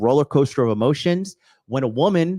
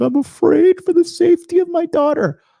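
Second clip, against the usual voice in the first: mock very high, loud, weeping voice; 6 dB louder than usual. Retelling how a speaker pleaded at a convention: imitating Richard Cooper crying.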